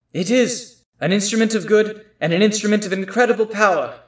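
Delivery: echoing woman's voice. Answering a character's question about the sword, in an echoing female voice. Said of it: "all of you hear a female voice echo".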